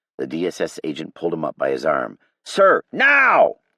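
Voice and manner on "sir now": very loud, very high, shrill, urgent scream. Reading a story aloud, an agent urging an official to leave: screaming. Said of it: "The agent screamed at him".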